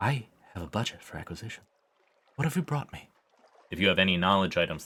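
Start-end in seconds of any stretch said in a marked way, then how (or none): 0.0-3.1 high, breathy, airy, hushed half-whisper. Narrator voices the scholar speaking to the listener, in a breathy half-whisper. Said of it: "the scholar whispers breathily".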